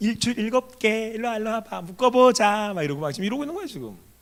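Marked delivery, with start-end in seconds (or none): 0.0-2.7 high, coy, wheedling, coaxing nasal voice. Retelling Samson's story, voicing the one luring Samson, in a put-on nasal voice. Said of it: "코맹맹이 소리 내면서".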